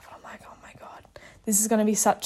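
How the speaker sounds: hushed whisper, under the breath. Recounting a ride with a chatty companion, the speaker relays a past thought, whispering. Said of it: "I'm whispering".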